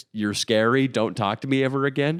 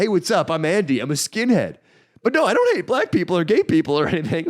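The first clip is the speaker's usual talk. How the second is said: offhand, casual delivery in a higher voice; 7 semitones higher, 4 dB louder than usual. Retelling how a skinhead acquaintance introduced himself to girls: imitating Andy. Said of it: "go up to seventeen-year-old girls and be like".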